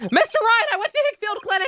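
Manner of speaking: shouting loudly. Voicing a character reporting a visit to a clinic: shouting loudly. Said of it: "use your Endor voice".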